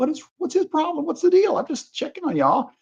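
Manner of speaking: very high, swooping voice on the verge of tears. Retelling a police stop, imitating someone about to cry. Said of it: "he almost is about to cry".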